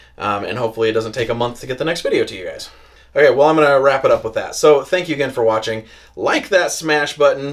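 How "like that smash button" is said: slow delivery, voice breaking and cracking. Wrapping up a video and asking viewers to like it, voice cracking. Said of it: "My voice just cracked".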